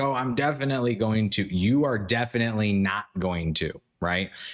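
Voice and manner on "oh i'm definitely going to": ordinary delivery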